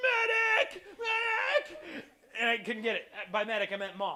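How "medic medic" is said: mock very high yelling call. Speaker recalling struggling to get a toy's belt on, retelling own yelling. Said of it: "And I'm yelling".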